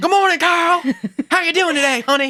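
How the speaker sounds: mad yelling, very high pitched. Acting out a show character who greets Carl: mock-angry Harriet Winslow yell. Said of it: "she is yelling and sounds mad".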